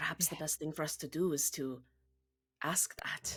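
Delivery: said quietly and hushed, under the breath. Speaking aside, not addressing the Oracle, in a quiet voice. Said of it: "I'm saying this quietly".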